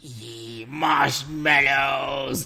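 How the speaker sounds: sinister, evil villain voice. Doing a viewer's request to say a word, evil voice. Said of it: "say bubbles or marshmallows in an evil voice".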